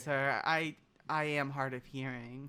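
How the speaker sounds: expressionless delivery. A character answers someone who just apologized to him, deadpan. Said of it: "He says deadpan".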